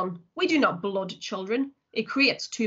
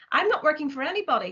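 pressing, insistent tone with raised pitch; 6 semitones higher than usual. A boy answers a man who is interrogating him, insisting. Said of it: "Steve insisted".

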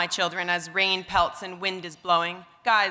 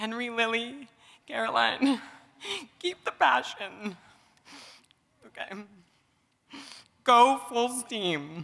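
tearful voice, higher pitch; 3 semitones higher than usual. Addressing family members during a celebration toast, crying while speaking. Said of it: "'cause I'm crying".

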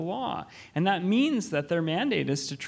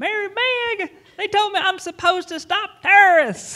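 shrill, very loud, high-pitched yell; 9 dB louder than usual. Retelling a call from a former immigration officer: imitating a woman yelling. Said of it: "I just remember her yelling across the phone".

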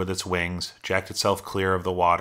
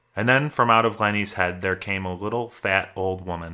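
plain reading voice

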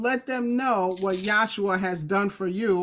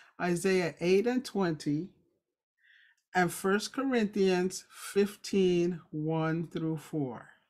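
slow, unhurried, deliberate reading; 5 dB quieter than usual. Citing scripture references so listeners can catch them, speaking slowly. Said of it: "I'm going to say it slow".

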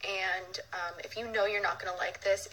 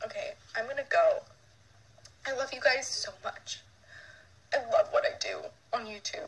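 tearful, talking through tears; 3 semitones higher than usual. Signing off a youtube video to viewers, crying while talking. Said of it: "Why am I crying?".

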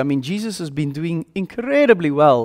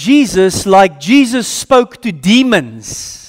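plain

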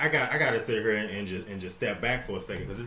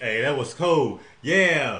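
put-on stoned voice, higher and louder; 4 semitones higher, 7 dB louder than usual. Retelling what she just said, imitating someone high. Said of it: "She was so high right there".

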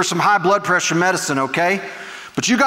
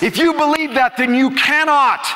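agitated, increasingly worked up; 7 semitones higher than usual. Addressing an audience that answers back, getting worked up. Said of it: "Sorry, guys, I'm getting worked up".

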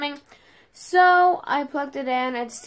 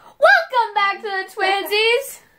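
put-on imitated scream, higher; 8 semitones higher, 4 dB louder than usual. Retelling the start of the vlog, imitating Lily screaming. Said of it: "Lily freaking screamed in my ear".

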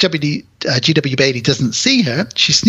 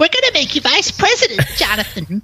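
very high, put-on old lady voice. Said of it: "Estelle Getty steps over that line ... and says".

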